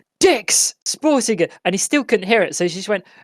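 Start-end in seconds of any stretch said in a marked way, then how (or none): 0.2-1.5 shrill screamed words. Retelling how she screamed at an old man on a call, retelling a scream. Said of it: "She was just screaming the word "dick" at this old man".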